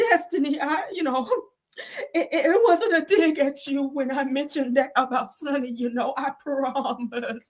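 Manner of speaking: fake, high, trembling, shaky voice. Quoting a woman's apology to destiny, done in a mock shaky voice. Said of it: "in her shaky voice".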